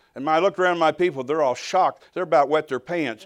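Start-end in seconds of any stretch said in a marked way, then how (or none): none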